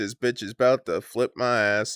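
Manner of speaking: ordinary talk, nothing marked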